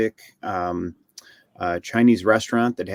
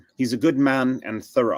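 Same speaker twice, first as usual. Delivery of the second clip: put-on Atlantic-style accent; 3 semitones higher than usual. Quoting Maud Lebowski from The Big Lebowski, Maud Lebowski impression. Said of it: "she's got a very Atlantic... Atlantican accent".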